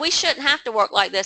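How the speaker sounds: plain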